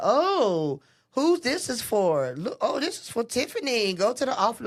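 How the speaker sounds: put-on condescending tone. Retelling how the office helper brought a pink slip: imitating a condescending tone. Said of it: "all condescending and stuff".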